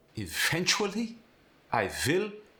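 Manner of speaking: put-on German accent, swooping, every syllable stressed. Explaining how to speak with one, the speaker demonstrates a German accent. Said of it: "when you're speaking with a German accent".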